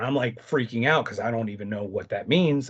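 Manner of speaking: ordinary talk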